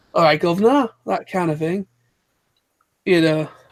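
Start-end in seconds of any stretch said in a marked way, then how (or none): 0.2-0.9 fake, laid-on British accent. Imitating americans putting on a british accent: mock fake british accent. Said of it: "when the Americans kind of emphasize that".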